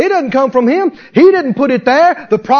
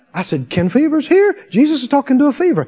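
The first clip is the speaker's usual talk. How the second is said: normal talking voice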